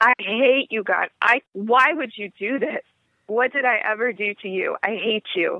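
ordinary talk, nothing marked

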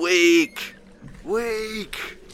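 very high, drawn-out, jeering, taunting shout. A player's character shouts down into the water after a dwarf disappears. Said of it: "I just shout down into the water".

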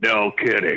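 put-on gruff hero voice. Quoting a scene where Wolverine answers Captain America: Wolverine voice. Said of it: "And Wolverine goes".

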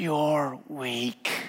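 soft half-whisper, close to the ear. Retelling how Monica came up out of nowhere: imitating a half-whisper. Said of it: "and whisper in my ear".

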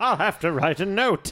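drawn-out, very slow, steady and deliberate delivery. Quoting the movie's Santa about writing a note: impression of the movie Santa. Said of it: "I'm doing a pretty good impression of this guy".

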